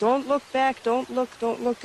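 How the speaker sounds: ordinary talk, nothing marked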